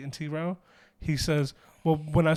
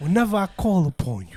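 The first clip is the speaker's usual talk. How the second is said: put-on Italian accent, louder; 3 semitones higher, 5 dB louder than usual. Quoting the Godfather while laughing: Godfather voice with Italian accent. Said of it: "That was a good Italian accent".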